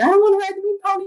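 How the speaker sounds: put-on, very high crying through sobs. Retelling a moment from old childhood videos: imitating own past sobbing. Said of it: "sobbing and crying".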